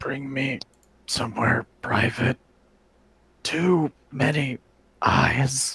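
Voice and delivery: feeble, faint, failing near-dead voice. Voicing a man the others doubt will survive, in a very weak voice. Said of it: "he kind of says in a very very weak voice".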